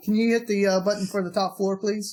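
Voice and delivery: calm, courteous, super polite tone. Retelling how Arnold asks in the elevator: imitating a super polite calm request. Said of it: "he's being super polite".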